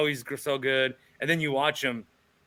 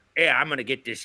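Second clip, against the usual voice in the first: put-on Philadelphia accent. Imitating a philly guy grabbing a moment: imitating a philly accent. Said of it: "that's my Philly accent".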